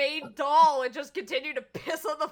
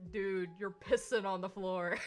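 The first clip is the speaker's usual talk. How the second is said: very deep, hushed, manliest possible voice; 8 semitones lower, 10 dB quieter than usual. Retelling a tweet about a six-foot-five porcelain doll at a convention bathroom, imitating the manliest voice. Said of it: "just in the manliest voice says".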